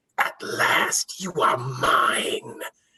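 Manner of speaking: eerie, very slow ghostly spirit whisper. Storyteller voices a spirit whispering into a man's ear, in a ghostly whisper. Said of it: "it whispers into his ear".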